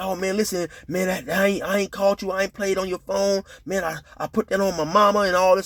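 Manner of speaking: stumbling, stuttering, stammering, tripping over the words. Retelling how a nervous man denied calling: imitating someone stuttering and stammering. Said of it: "he go to stuttering and stammering".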